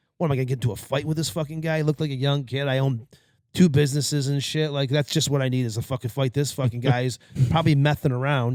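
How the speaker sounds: ordinary talk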